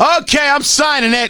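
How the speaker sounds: slow, slightly high delivery. Acting out the mayor agreeing to sign a letter, imitating Joe Hogsett. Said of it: "I assume that's what he sounds like".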